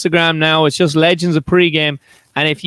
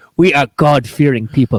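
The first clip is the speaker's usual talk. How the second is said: put-on Nigerian English accent; 4 semitones lower than usual. Showing how a line sounds when read in a put-on nigerian accent. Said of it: "if you read it in a Nigerian accent".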